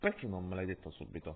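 ordinary delivery

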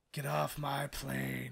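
put-on gruff voice of a movie tough guy. Joking about a movie novelization cover: Clint Eastwood impression. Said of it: "great at it".

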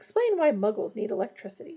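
ordinary delivery

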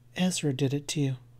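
toneless, level, low and soft flat monotone. Kitty speaks to the wounded Pat in a low flat monotone. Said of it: "Kitty's voice was low and flat and monotone".

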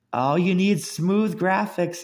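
high-pitched, teasing, belittling, taunting tone. Recalling how much they made fun of humans: retelling a mocking taunt. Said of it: "You have no idea how much I've made fun of humans".

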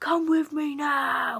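put-on booming, loud, slow, deliberate furious delivery. Retelling a strict teacher ordering a caught pupil away: imitating a furious teacher. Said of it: "he went mental".

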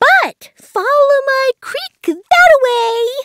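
very high, chirpy little call. Narrating a story, the otter gives Junavik directions: chirped. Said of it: "he chirped".

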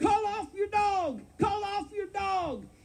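mock screaming, shrill, very high, loud yell. Speaker retelling how their mother yelled at a dog's owner: imitating someone yelling. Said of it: "she was yelling and screaming".

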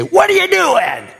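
shrill, high-pitched shrieking yell. Showing parents how not to correct her, demonstrating a yell. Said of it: "You don't yell at her".

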